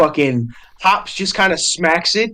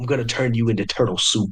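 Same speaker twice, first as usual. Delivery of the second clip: low, hushed, muttered bear voice; 5 semitones lower, 6 dB quieter than usual. Voicing a bear whose jaw clamps on a player's shell, the storyteller is muttering back. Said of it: "he mutters back".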